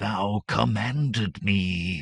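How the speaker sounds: hissed, snake-like serpent voice. A narrator reads the great serpent speaking inside a man's head: hissing serpent voice. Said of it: "a voice hissed in Conan's head".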